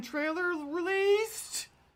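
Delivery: very high-pitched, swooping, animated and excited voice. Sharing news with listeners, the speaker's voice goes high. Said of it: "That's how high your voice goes".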